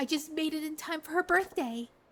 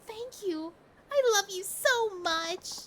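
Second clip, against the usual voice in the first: tearing up, on the verge of tears; 4 semitones higher than usual. Speaker thanks the other person, tearing up. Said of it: "I'm tearing up now".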